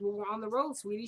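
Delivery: ordinary talk, nothing marked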